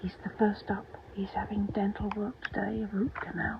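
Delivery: soft, hushed, barely voiced whisper. Speaker on a veterinary day with the patient right behind him, whispering. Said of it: "I'm whispering".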